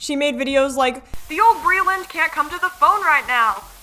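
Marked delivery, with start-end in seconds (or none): 1.3-3.6 put-on Southern accent, pitched up. Acting out a woman's video line, put-on Southern accent. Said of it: "I'll never do a southern accent again".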